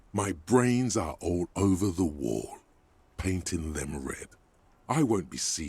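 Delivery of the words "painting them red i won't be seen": ordinary talk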